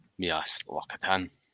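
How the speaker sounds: put-on Scottish accent. A speaker answers a question in a put-on Scottish accent. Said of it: "That wasn't a bad accent there".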